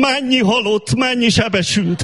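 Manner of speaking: bumbling station announcer voice.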